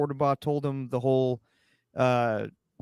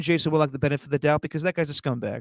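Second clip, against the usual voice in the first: ordinary talk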